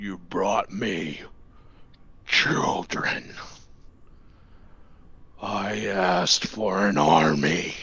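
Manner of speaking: deep, low demonic voice. Narrating a bubbling pool, voicing what each pop says in a deep demonic voice. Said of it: "a deep demonic voice".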